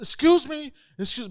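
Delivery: screaming, calling out. Retelling how a man in the street screamed at a passing girl: imitating someone screaming. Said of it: "he starts screaming at the girl".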